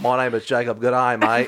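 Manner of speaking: put-on Australian accent. Joking about Jacob's Australian cousin, introducing the cousin in a put-on Australian accent. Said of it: "His Australian cousin".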